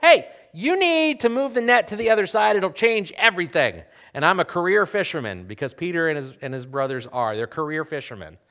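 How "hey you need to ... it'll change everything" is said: shrill, loud shout. Retelling how a stranger might call out about the net: imitating a stranger screaming. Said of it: "some random guy screams at me and goes".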